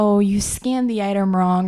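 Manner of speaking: normal talking voice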